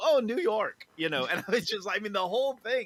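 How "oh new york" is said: put-on heavy Indian accent, higher and louder. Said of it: "the guy with the really heavy Indian accent".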